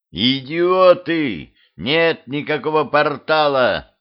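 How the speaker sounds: high, drawn-out outburst with Идиоты stretched long. Narrator reads a character telling the crowd off, yelling. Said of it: "заорал Дюдя".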